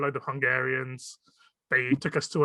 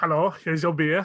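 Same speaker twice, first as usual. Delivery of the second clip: put-on Eastern European female accent. Playing a waitress bringing a beer to the table, as asked: eastern european female accent. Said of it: "Eastern European female accent".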